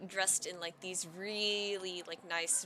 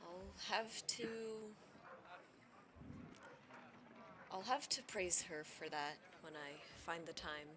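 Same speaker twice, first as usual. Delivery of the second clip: soft, hushed whisper, barely audible; 11 dB quieter than usual. A narrator voicing a character who nods and answers the group, whispering. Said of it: "and he whispers".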